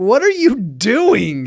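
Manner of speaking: put-on loud, high, swooping yell, "doing" stretched. Speaker retells yelling at the man mowing the grass, retelling a yell. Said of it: "now I'm yelling".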